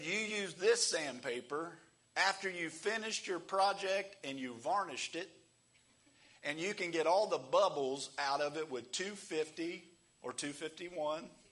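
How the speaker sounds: put-on Kentucky accent. Retelling a shop teacher's words: imitating a Kentucky teacher's accent. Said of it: "he was from Kentucky".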